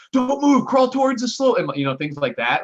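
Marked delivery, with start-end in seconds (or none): 0.2-1.6 very high-pitched, loud, barked cop-like shouting. Speaker recounts officers yelling conflicting orders at a man in a hallway; imitating police yelling orders. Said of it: "they were like yelling conflicting things at him".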